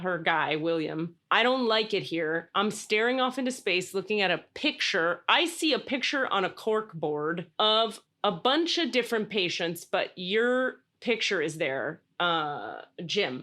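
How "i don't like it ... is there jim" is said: usual speaking voice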